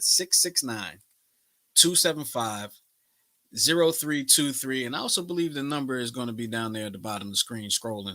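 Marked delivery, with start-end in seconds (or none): 0.0-4.8 slowed-down, deliberate, careful, each digit spelled out. Show host repeats the call-in number for viewers, a little slower. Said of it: "I'll say that a little slower".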